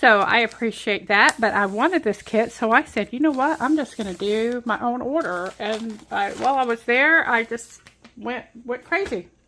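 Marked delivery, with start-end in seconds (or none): none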